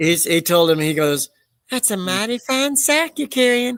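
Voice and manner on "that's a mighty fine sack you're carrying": put-on creepy old man voice, higher pitch. Retelling a Family Guy scene: impression of Family Guy's old man. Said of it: "You do a good impression of the old guy".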